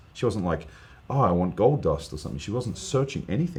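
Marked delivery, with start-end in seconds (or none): none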